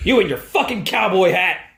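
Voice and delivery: berating, scolding, tearing-into voice. Retelling watching a debut, doing a Triple H impression. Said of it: "an imitation of Triple H".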